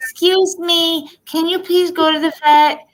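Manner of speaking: put-on very high little kid voice. Speaker retells a voice they suddenly heard in a family story; cute little voice. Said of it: "I hear this cute little voice".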